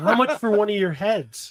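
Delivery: ordinary talk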